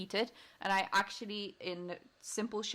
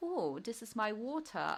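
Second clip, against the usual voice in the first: playful, slow, put-on British accent; 2 semitones higher than usual. Explaining they imitate accents just for fun, in a joking put-on british accent. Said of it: "I was trying to get the British accent, like".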